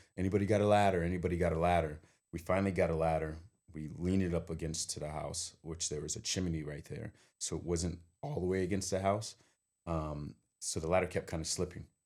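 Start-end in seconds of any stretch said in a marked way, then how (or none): none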